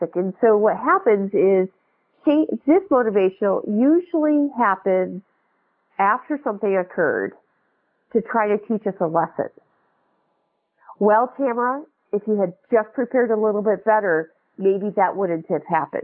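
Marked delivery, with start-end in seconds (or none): none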